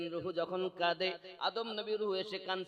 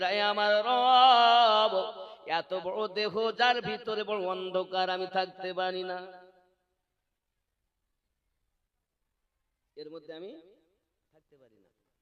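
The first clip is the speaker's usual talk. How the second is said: weeping, louder; 7 dB louder than usual. Voicing the soul crying out to its Lord: crying. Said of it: "রুহু বার হয়ে আসে আর কান্না শুরু করেছে".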